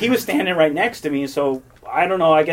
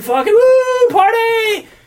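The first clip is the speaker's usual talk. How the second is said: very high, loud, rowdy party whoop; 8 dB louder than usual. Retelling going down the aisle while everyone yells: retelling everyone yelling. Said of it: "everyone's yelling".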